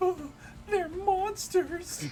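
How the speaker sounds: weak, pitiful whisper. Voicing a defeated contestant calling the challengers monsters: pathetic whispering. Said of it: "think like the pathetic and whispering".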